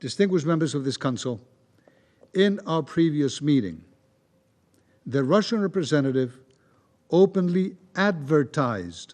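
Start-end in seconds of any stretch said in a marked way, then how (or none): 7.1-9.1 advertised stressed, slow and deliberate. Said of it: "I underline the word".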